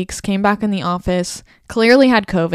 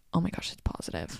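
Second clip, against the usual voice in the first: very quiet, breathy whisper under the breath; 5 semitones lower, 18 dB quieter than usual. Retelling what a coworker said: imitating someone whispering. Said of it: "whispering to me".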